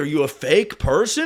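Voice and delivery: ordinary talk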